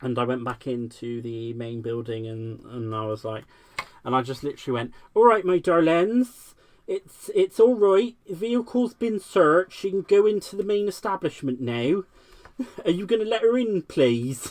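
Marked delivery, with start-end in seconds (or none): 5.1-14.5 very loud, high, hammed-up, put-on Bristol accent. Retelling own words to colleagues after a vehicle search: put-on Bristol accent. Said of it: "pretending that we were from Bristol".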